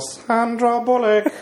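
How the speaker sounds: high-pitched put-on voice with laughing.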